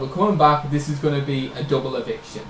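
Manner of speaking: usual speaking voice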